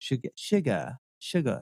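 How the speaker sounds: whispered put-on British accent, "sugar" without the R. Mocking how English accents say a word, mock English 'sugar', no R. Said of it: "but when they say sugar, it's like sugar".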